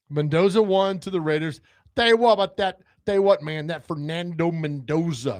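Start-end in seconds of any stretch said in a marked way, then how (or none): 1.9-5.4 talked-up TV football commentator voice. Predicting the first draft pick: Jon Gruden impression. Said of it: "That's my Gruden impression".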